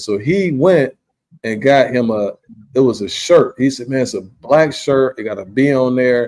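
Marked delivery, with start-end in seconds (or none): none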